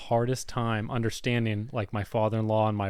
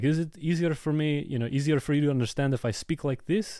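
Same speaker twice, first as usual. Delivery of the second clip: put-on speaking with a Macedonian accent; 4 semitones higher than usual. Retelling asking someone about understanding better, imitating a Macedonian accent. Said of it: "I started imitating the Macedonian accent".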